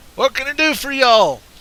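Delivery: put-on very high, loud, booming southern-accent bark. Retelling what someone yelled from a minivan window: retelling a bark, Southern accent. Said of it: "Never mind the southern accent".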